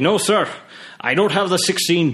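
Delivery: put-on heavy, high Scottish accent. Retelling what a shopkeeper in Edinburgh said: thick Scottish accent. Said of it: "thick Scottish accent".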